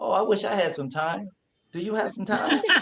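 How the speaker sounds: high, sarcastic, funny teasing. Recalling asking their mother for a dime, imitating her sarcastic joking reply. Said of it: "she would be sarcastically funny about it".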